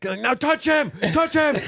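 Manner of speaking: mock very high, drawn-out screaming. Recalling his father, his coach, screaming at him during a game: imitating a coach screaming. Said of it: "screaming at me".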